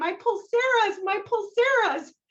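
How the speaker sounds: very high, shrill screaming in put-on English accent. Retelling screaming on a departing school bus: imitating own past screaming. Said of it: "screaming at the top of my lungs in my best English".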